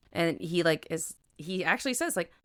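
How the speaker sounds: usual speaking voice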